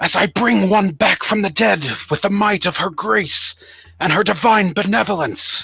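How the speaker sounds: calling out loudly, proclaiming, not screaming. Voicing a cleric calling out to a gathering tavern crowd: calling out loudly, not screaming. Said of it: "call out, but not, not scream out, but call out so it can kind of be heard".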